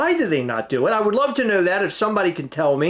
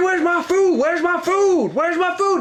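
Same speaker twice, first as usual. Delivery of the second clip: shrill, high-pitched, repeated screaming; 10 semitones higher than usual. Telling a friend about an incident at a counter, acting out how an angry customer kept yelling, imitating someone screaming. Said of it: "the guy's up on the on the counter screaming".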